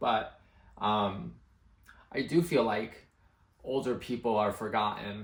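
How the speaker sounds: slow voice full of emotion. Reacting to a video she likes, getting emotional. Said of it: "I don't know why I'm getting emotional".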